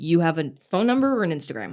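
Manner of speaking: put-on snippy, dismissive tone. Retelling how they asked a guy at the gym for his number: imitating own bitchy tone. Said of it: "so I was really bitchy".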